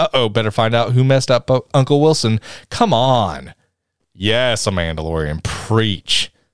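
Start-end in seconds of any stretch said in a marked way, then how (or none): none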